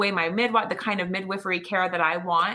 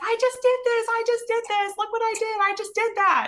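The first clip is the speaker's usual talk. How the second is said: mock thrilled hollering, pitched way up. Retelling heading out the door to the ambulance, reenacting excited screaming. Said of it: "screaming and hollering like the whole way out the door".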